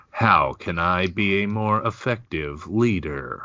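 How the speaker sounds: exaggerated put-on robotic, android-like voice. Complaining about a boss at work, imitating the boss's robotic voice. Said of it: "I'm only slightly embellishing that voice".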